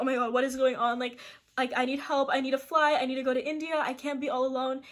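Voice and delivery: mock crying in a panic. Retelling breaking down in front of security guards, imitating panicked crying. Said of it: "like I just start crying".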